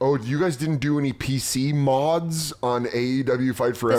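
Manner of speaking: ordinary talk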